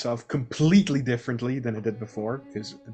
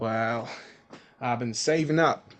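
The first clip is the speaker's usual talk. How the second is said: put-on drawling Southern accent. Told the room price, an itinerant worker answers the innkeeper in a Southern drawl. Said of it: "the good old Southern drawl".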